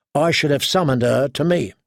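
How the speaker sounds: plain reading voice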